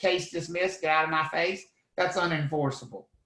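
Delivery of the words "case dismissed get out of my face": ordinary talk, nothing marked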